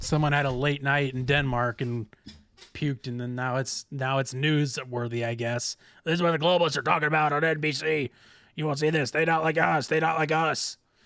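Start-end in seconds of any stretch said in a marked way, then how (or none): 6.0-10.8 strained, throat-straining put-on voice, louder, higher. Reading out news headlines on the show, slipping into a throat-straining impression voice. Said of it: "That's a very good impression".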